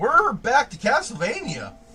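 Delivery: scratchy, cracking high voice. Announcing the return to Castlevania, sounding like a scratchy-voiced teen. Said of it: "without sounding like a scratchy voice teen".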